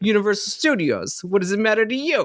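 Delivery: poor, put-on New York accent. Retelling workers' reply to someone filming them, bad New York accent. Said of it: "why did they all of a sudden sound like they're from New York".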